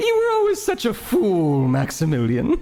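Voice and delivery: very high speech with hysterical laughing throughout. Narrating a scene, then voicing Audrey as she laughs hysterically. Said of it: "laughing that hysterical laughter".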